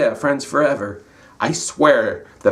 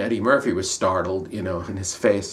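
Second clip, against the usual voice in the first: plain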